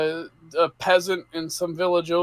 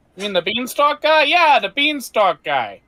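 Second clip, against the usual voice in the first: put-on Midwestern accent, higher; 6 semitones higher, 3 dB louder than usual. Voicing townsfolk talking about ogres and a lost vault: midwestern accent. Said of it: "the Midwestern accent I'm about to give them".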